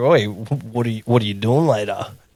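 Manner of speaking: put-on sexy, seductive voice. Retelling how the other speaker was invited to chat: imitating own sexy voice. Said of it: "put on my sexy voice".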